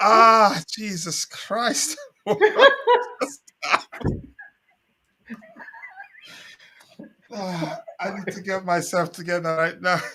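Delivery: swooping, tearful laughing talk, crying with laughter. A host losing composure before hosting a show, crying with laughter. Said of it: "I'm crying here".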